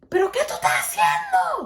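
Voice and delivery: very high screaming yell, spoken in Spanish. Retelling how the grandfather reacted to a fall: imitating someone screaming. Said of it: "he was screaming at me".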